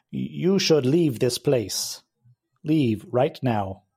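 robotic, mechanical machine-like speech. A creature steps out from behind a rock and speaks: mechanical voice. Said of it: "in a mechanical voice it says".

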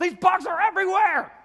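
very high, loud, freaked-out shriek. Retelling freaking out over bugs in his house, re-enacting his yelling. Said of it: "I'm yelling in the house".

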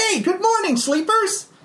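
loud, very high, chirpy, cheery put-on voice. Voicing Kalman greeting the waking sleepers: loud cheery character voice. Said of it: "I am not nearly awake enough for that voice".

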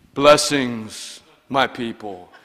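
low, solemn, pious put-on preacher voice. Speaker imagining greeting churchgoers from the pulpit every Sunday: put-on pulpit tone. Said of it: "they always have him talking in tones like we don't talk".

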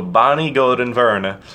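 Scandinavian-sounding delivery. Introducing a former teacher by name, Scandinavian accent. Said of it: "I'm turning it like Scandinavian".

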